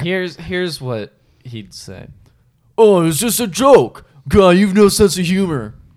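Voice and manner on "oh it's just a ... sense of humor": loud, swaggering, macho greaser tough-guy voice. Showing what he'd say, impersonating a toxic man. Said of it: "my impersonation of a toxic man".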